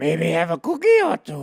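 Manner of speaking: high, monster-ish voice with swooping, swinging pitch. Trying out voices with the group, a little bit Yoda voice. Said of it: "It's a little bit Yoda".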